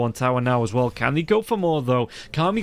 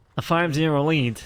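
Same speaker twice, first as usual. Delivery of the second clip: nasal voice, speaking through the nose. Speaker tries the line again, in a nasal voice. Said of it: "Talk more nasally".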